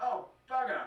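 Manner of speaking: everyday New Zealand accent. Showing what Kiwis say after a mistake: New Zealand accent. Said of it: "us Kiwis would say".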